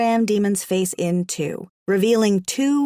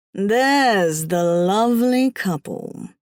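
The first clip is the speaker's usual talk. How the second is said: icy, silky, butter-smooth, dark, ominous menace. A voice from the dark hallway greets the narrator: dark, ominous, smooth voice. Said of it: "A dark, ominous voice as smooth as melted butter and as icy as winter frost".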